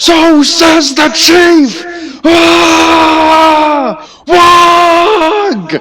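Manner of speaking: very high, very slow war-cry crowd shout. Voicing a crowd of orcs answering their chief: orc crowd shouting in response. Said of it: "you hear everyone just shout in response".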